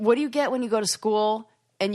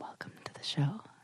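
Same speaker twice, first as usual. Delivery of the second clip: hushed, very quiet, soft, breathy whisper; 6 semitones lower, 13 dB quieter than usual. Co-host tries the show intro from the other side of the microphone, whispery voice. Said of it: "I can't even do a good whispery voice".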